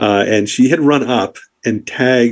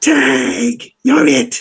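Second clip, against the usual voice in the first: rough, raspy, very high-pitched voice. Retelling a girl's taunt heard at the tents: raspy voice. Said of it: "was this raspy".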